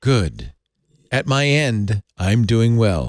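stiff, cold, stilted and unnatural. The mother answers her child's greeting, unnatural. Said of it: "You sound kind of unnatural".

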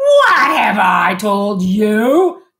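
booming, thundering, very slow, swooping bellow. Uncle Vernon rounds on Harry across the kitchen table, thundering. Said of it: "thundered his uncle".

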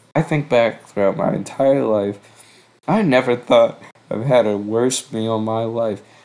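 ordinary talk, nothing marked

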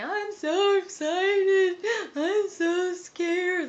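very high, very slow, loud, drawn-out shriek. Recalling a Saved by the Bell scene, imitating Jessie screaming. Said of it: "she's like screaming".

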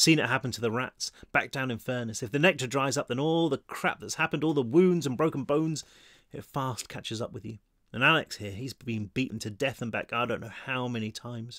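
ordinary delivery

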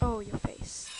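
ordinary talk, nothing marked

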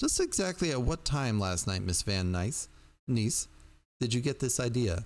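plain reading voice

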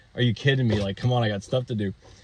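usual speaking voice

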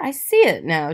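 ordinary delivery

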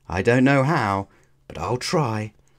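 plain reading voice

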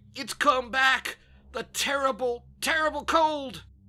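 very shrill, very loud, agonized choking cry. Narrator reading a man clutching his head in agony, choked in agony. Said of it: "he choked".

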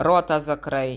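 roared, bellowing. A doctor snaps at his patient after hearing his story, roaring. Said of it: "рикнув лікар".

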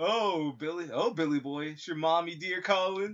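creepy clown voice. Asked to do a Laughing Jack voice, answering a pretend phone call in it. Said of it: "do a Laughing Jack voice for me".

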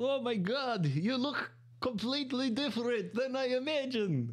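bad put-on Russian accent, pitched way up. Retelling what Sergei said after seeing their last video: terrible Russian accent. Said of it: "Sorry about the terrible Russian accent".

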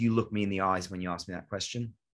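usual speaking voice

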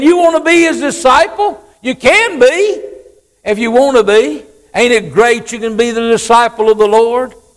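mildly sarcastic, needling tone. Retelling the blind man's words to the Pharisees: imitating a sarcastic tone. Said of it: "a little bit sarcastic here".

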